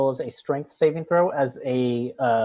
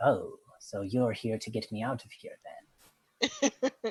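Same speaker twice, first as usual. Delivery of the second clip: soft, cat-like purring tone; 3 semitones lower, 8 dB quieter than usual. Storyteller voices what a player hears in their mind, in a purring voice. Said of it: "a purring voice say".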